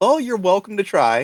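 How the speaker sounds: cold, calm, even-toned menace, a touch high. Game narrator voicing a character replying to a player character, in a calm tone. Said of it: "just in a calm tone says".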